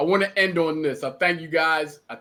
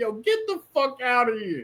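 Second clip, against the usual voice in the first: put-on, high, cracking up mid-sentence, disbelieving; 8 semitones higher than usual. Retelling a reaction to liver and gizzards: retelling uncontrollable laughter. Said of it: "I couldn't control my laughter".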